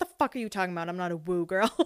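quick, hushed, defensive, caught-off-guard tone. Retelling a reply to someone at work who asked about a term, retelling getting defensive. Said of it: "I got all defensive".

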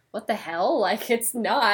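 ordinary delivery

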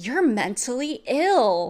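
sarcastic yelled jab with swooping pitch. Retelling how someone broke a serious moment among friends: retelling a sarcastic shout. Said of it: "he sarcastically shouts".

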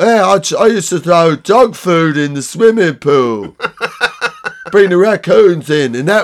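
put-on 1970s rock star English accent. Mocking how Americans do English accents, the speaker does a 1970s rock star accent. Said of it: "Or they all go for the 1970s rock star".

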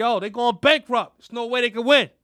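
tough-talking, trash-talking delivery. Imagining what Elon Musk said about rivals: imagined tough-talking Elon Musk. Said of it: "I'm sure it's just like that".

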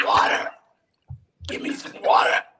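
very loud, bellowing cartoon camel voice. Recalling his favorite moment from a show, he does a camel impression voice. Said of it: "Epstein does his impression of a camel".

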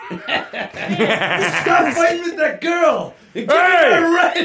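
high-pitched shouted yell. Retelling what a man clearly yelled at someone, retelling a yell. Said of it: "he yells that clearly at him".

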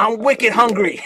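very loud, high Boston accent zombie voice. Joking about how a zombie would sound: zombie with a Boston accent. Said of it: "a zombie with a Boston accent".

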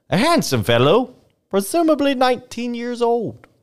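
very high, affected, put-on Northern accent. Reading an old newspaper report aloud, in a put-on accent. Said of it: "Where are you getting these accents from?".

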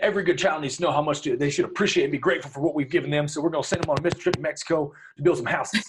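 heavy put-on Southern, very Texan accent. Imitating staunch Christians talking about their kids: imitating staunch Christians in Texan accent. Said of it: "they take on this very Texan accent".

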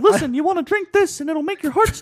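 squeaked out, high and loud. Friends imagining a Romeo and Juliet scene with Friar Lawrence as Mickey Mouse, Mickey Mouse voice. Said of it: "Friar Lawrence is Mickey Mouse".

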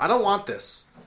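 shrill high-pitched outcry. Retelling a lady in a closing store: imitating someone yelling. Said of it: "She just yelled to the".

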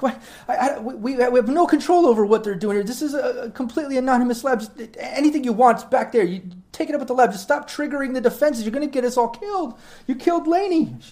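very high-pitched, tearful, sobbing outburst. Narrating to players, voicing a scientist pulled up by her lab jacket; crying scientist. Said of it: "struggles for a moment, like, crying".

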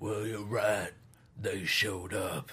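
bad fake British voice, low and slow.

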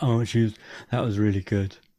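low-pitched woman's voice. Retelling what his wife said after the film: imitating his wife in a deep voice. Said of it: "your wife got a deeper voice than you".

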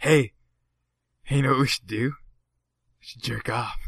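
low, creepy, leering voice. Doing the voice of the perv on the corner; creepy pervert voice. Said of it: "sounds like the perv on the side of the corner".

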